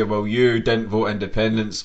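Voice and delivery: ordinary talk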